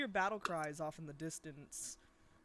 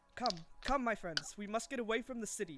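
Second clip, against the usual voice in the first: loud, raised voice calling out; 4 semitones higher, 4 dB louder than usual. Voicing a tabaxi in armor urging the group to flee: shouting. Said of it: "you can hear him shouting out".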